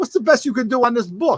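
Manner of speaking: put-on heavy Jersey New York accent. Retelling what a kid asked Roger, in a thick Jersey New York accent. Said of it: "With this thick, like Jersey, New York accent".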